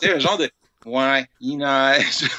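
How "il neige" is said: put-on despairing, weary delivery with falling downward inflection. Imitating a character's short line at a window during a blizzard, with a weary falling delivery. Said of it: "dit avec un ton, une espèce de, d'accent tonique descendant".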